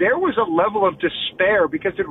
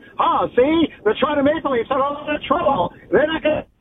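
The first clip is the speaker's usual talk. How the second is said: put-on high-pitched old-timey nineteen-twenties voice; 7 semitones higher than usual. Talking to the guys about the toronto maple leafs, in a 1920s old-timey voice. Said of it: "Do you want me to do like a 1920s voice?".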